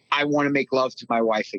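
normal talking voice

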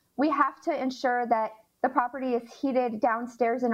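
usual speaking voice

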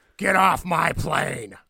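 very slow, gruff, loud, rough, drawn-out action-hero delivery. Quoting Air Force One a second time, after a first try was called terrible. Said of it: "That was a terrible one".

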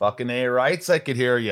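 put-on Canadian accent. Hosts greeting each other at the start of the show, mock Canadian accent. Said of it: "I'm trying to be Canadian right now".

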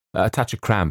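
plain

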